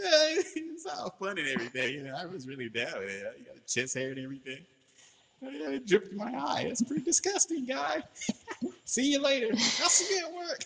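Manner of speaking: put-on very high, sing-song, swooping rich-kid voice. Speaker quotes what she said about sweat in her eye: little rich-kid voice. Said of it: "that little voice like the rich privileged kids".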